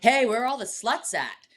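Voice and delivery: put-on brash, dead-sure tone. Retelling a stranger's question at a wedding bar: imitating someone saying it confidently. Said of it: "the most confidence".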